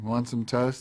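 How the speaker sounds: mock bone-dry, flat, expressionless deadpan line reading. Retelling an audition reading of a toaster's line: deadpan line reading. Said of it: "I did it really deadpan".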